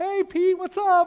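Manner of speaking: very high, loud, bright, bubbly voice. Retelling a Bible story, voicing Sapphira greeting Peter: bubbly, happy Sapphira voice. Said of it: "all bubbly and happy".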